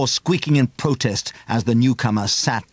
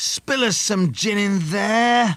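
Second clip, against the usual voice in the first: very high, coaxing, spitting wheedling voice; 10 semitones higher than usual. A man's voice carries into the children's bedroom, wheedling and spat out. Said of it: "a wheedling male voice spat".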